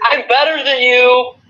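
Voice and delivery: put-on very high Montreal accent. Joking about a wrestler, saying a line in a Montreal voice. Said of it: "In my Montreal voice".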